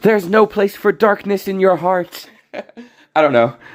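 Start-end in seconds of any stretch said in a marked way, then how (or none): 0.0-2.3 soft-toned character voice, pitched up. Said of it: "he has a soft voice".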